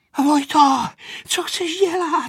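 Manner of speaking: breathless, winded, very high-pitched loud calling. Narrator reading a character's question after running to catch up, breathless. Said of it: "Vypravila ze sebe udýchaná Aneška".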